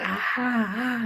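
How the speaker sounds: put-on very high, loud yelp of pain. Acting out a man bitten by a hundred red ants: mock shouting in pain. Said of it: "and he starts shouting".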